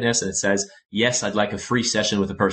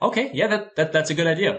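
put-on Italian accent, much higher in pitch; 7 semitones higher than usual. Retelling a man agreeing to the suggested package, imitating an italian accent. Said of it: "with his Italian accent".

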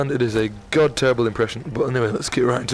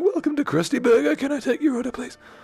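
very high, squeaky, cartoonish put-on voice; 13 semitones higher than usual. Demonstrating what his voice sounds like: really high-pitched voice. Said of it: "really fucking high-pitched thing".

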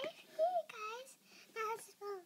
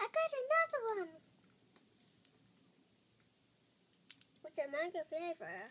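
put-on low cat voice with swooping pitch; 5 semitones lower than usual. Speaker voices a cat for video viewers, cat's voice. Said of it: "I'm just actually doing cat's voice".

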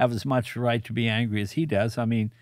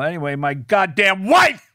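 very loud, furious, angry comedic griping; 8 semitones higher, 8 dB louder than usual. Retelling a comedian's stage bit after his divorce: imitating Skip Stevenson's angry bit. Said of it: "the anger in his vo-".

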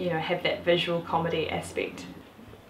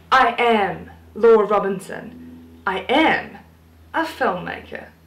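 loud, booming, slow, drawn-out TV presenter voice; 3 semitones higher, 8 dB louder than usual. Introducing oneself for the camera: Seven Sharp voice. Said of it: "I'll do my Seven Sharp voice".

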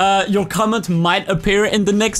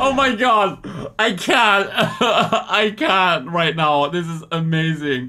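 laughing hard, dying of laughter; 3 semitones lower than usual. Reacting to something they find hilarious, cracking up laughing. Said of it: "I'm dying".

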